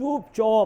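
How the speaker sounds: slow, drawn-out chup chup. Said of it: "ये इनकी अदा".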